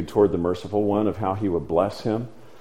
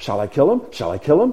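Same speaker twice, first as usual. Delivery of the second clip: keen, eager, high-pitched excited delivery; 5 semitones higher than usual. Retelling a story, acting out his repeated question as an excited question. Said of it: "Do you catch the excitement in his voice?".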